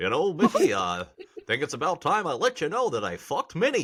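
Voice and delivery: put-on cartoon dog character voice. In a comedy bit with cartoon characters, the speaker addresses Vicky in a Goofy voice. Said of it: "That's a really good Goofy".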